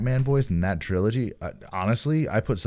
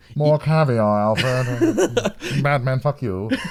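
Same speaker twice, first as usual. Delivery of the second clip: put-on drunken villain voice, loud and pitched up; 6 semitones higher, 6 dB louder than usual. Mocking how Bane sounded while discussing him with a friend, use a drunk Sean Connery voice. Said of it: "like it was like drunk Sean Connery".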